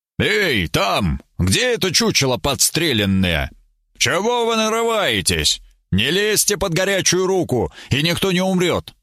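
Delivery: barking shout, pitched high. Narrator, peering into the rainy dark forest, calls out to whoever is there, barked. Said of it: "и рявкнул".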